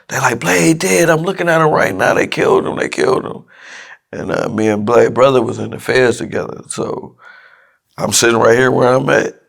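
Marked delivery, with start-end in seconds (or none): 0.4-3.4 mock, high, frantic, panicked screaming. Retelling a phone call from his cousin and his daughter's mother, imitating people screaming. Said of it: "They screaming to the top of their lungs".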